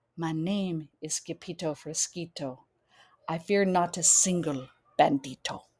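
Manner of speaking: very soft, hushed, low little voice. Narrator reading the sword fighter introducing himself to an approaching bandito, very soft voice. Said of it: "in a muy, muy soft voice".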